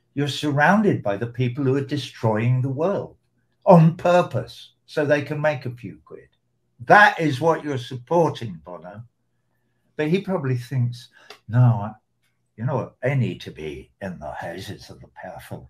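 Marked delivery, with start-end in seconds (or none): 11.5-15.7 put-on terrible Northern Irish accent. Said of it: "I've gone Northern Irish".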